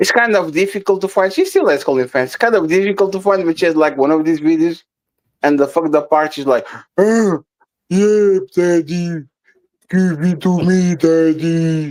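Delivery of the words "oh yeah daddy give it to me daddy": very slow, very drawn-out, cigarette-worn smoker's voice. Retelling a woman's line from one of her videos: imitating a smoker-sounding woman. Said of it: "she sounds like Papi Blanco if Papi Blanco smoked ten cig- cigarettes per day".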